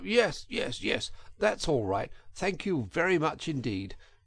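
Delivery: hasty, rushed, hurried delivery. Narrator reading Toad's reply to the girl who offers help: hurried. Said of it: "said the Toad hurriedly".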